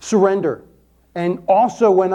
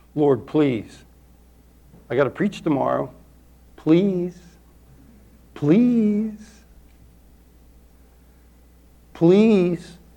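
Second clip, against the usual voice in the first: acted-out pleading, imploring, begging tone. Recounting praying at night in pain before preaching, retelling pleading prayer. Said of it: "I just plead".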